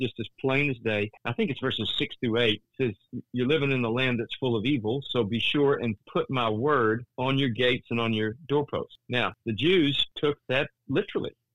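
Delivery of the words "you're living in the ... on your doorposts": usual speaking voice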